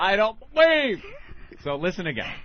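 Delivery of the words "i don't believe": high, loud startled break mid-sentence. Retelling how a guest sounded when startled mid-sentence: imitating a startled jolt. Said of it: "you could tell right when his finger shoved up her ass by her going".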